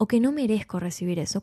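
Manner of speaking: ordinary talk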